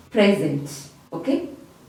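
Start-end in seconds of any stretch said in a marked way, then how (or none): 0.1-0.7 PREsent, first syllable hit hard. Giving an example of a noun, stress on first syllable of present. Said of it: "you can hear me putting a lot of emphasis on the first syllable of the word".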